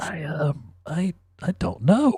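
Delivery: choked, strangled, high voice. Retelling a man's answer when a drag queen asks if he's straight, strangled reply. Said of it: "Man in a strangled voice".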